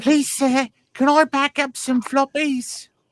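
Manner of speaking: very high put-on Victorian orphan voice, begging tone. Speaker retells reaching out to an uncle, Dickensian orphan impression. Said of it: "I did my best Dickensian orphan impression".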